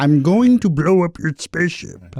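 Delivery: swooping classic cartoon Martian voice. Trading impressions, one speaker does a cartoon character: Marvin the Martian voice. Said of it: "Oh, Marvin Martian".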